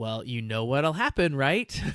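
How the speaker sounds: chilling, creepy, mothering, veiled menacing tone. Retelling how the lady quietly threatens Knox: imitating a creepy motherly threat. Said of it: "such a creepy motherly thing".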